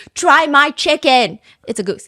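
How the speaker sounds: mock shouting. Retelling how a man pushed his hometown goose, imitating someone shouting. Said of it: "he's shouting it in his dialect".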